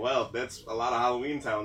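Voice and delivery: plain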